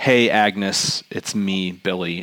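slow, put-on creepy voice. Retelling what a man said at someone's door, in a put-on creepy voice. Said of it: "that was plenty creepy".

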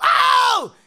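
very high, shrill, very loud panicked yelp. Retelling own reaction to being burned: retelling flipping out. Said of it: "flipping out or whatever".

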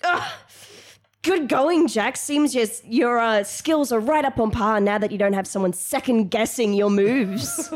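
pained, spiteful tone. Voicing a hurt character who grunts after being hit: grunting, bitter jab. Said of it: "she just grunts and she's like".

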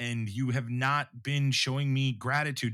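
ordinary talk

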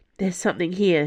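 ordinary delivery, nothing marked

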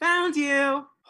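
very loud, very high-pitched shout. A player points at the barrel where a creature is hiding: very loud shout. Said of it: "very loudly say".

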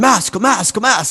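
acted German accent, very high screaming. Retelling airport police yelling at the speaker, imitating German police screaming. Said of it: "in this German accent".

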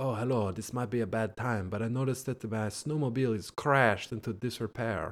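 super suave, sexy voice laid on thick with charm. Retelling a scene where a visitor asks about his crashed snowmobile: suave Marco voice. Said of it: "super sexy, suave Marco, he's like".

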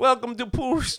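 put-on Jamaican accent, very high-pitched and loud. Greeting a guest as a pirate show host, jamaican accent. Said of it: "he's Jamaican now".

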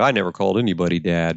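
offhand, callous, cavalier, dismissive tough-guy voice. Recalling how he used to say it as a tough guy: mock-callous, cavalier. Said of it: "I used to say that with this callous cavalier".

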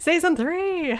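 very high, bubbly, over-eager, gushing enthusiasm. Giving the host a note on delivery, then demonstrating it: mock-enthusiastic Anna Spanakopita impression. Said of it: "you'd have a little more enthusiasm".

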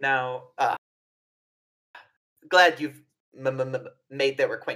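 stuttering, stammering speech. In an acted scene about guests arriving at the hotel, a character speaks stammering. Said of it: "My my my, my stammer is a".

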